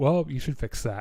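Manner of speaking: calm, casual, offhand tone. Retelling a movie scene where Morrow answers the engineer: deadpan Morrow line. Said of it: "fucking deadpan looks at him and goes".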